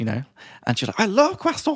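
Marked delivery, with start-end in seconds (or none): 1.0-1.8 put-on very high, thrilled, excited little-kid voice. Retelling a child's answer about croissants: imitating an excited child. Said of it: "so excited".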